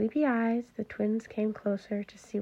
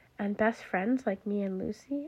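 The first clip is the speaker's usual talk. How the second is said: plain reading voice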